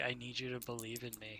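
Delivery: hushed, soft half-whisper. Voicing a character who embraces a player and half-whispers to them: half-whispering in character. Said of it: "then he just whispers to you".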